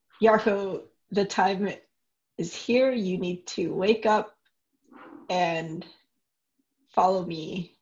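very stern, hushed, quiet delivery. In a role-play scene, waking a snoring character, stern and quiet. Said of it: "speak very sternly and quietly".

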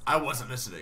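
normal talking voice

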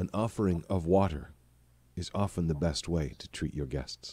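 patient, calm tone. A still figure looks down at you and speaks, in a patient voice. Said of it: "there's a patient voice that comes out".

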